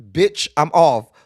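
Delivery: loud, flat-out, blunt and firm delivery. Acting out their back refusing to go to work: voicing their back talking. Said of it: "Your back be like".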